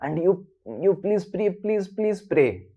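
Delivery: mock, desperate, repeated begging and pleading. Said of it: "really begging".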